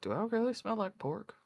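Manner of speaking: secretive half-whisper. Voicing a character leaning over to ask another a question: half-whispering. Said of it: "leaning over to Erasmus and whispering".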